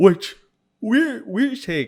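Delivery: high, loud words spoken through a yawn. Speaker talks about Spider-Man movie runtimes, yawning while talking. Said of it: "Sorry, I'm yawning so much".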